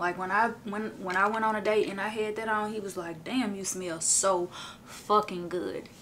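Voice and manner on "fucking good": heavy stress on fucking good. Quoting a date's reaction to the perfume, stress on 'fucking good'. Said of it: "Emphasis on the fucking good".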